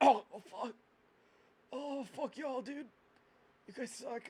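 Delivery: groggy, resentful. A wounded man, just healed, groggily curses at the people who patched him up. groggy, resentful. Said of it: "I I can't take you there. They'll kill me, man. I can't take you. They'll kill me. / Because you dropped him on broken kneecaps, and he goes, "Ah, Oh, shit! Fuck! God, motherfucking robot piece of shi".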